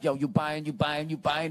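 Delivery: street hustler voice, repetitive delivery. Retelling a pimp on a bicycle calling out while riding past: imitating a pimp on a bicycle. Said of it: "he was just going like".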